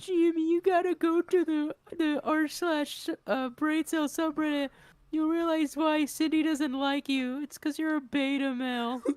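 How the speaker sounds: squeaky put-on voice, pitch pushed way up. Speaker voicing Carl addressing Jimmy, in a Carl voice. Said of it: "I can kind of do Carl".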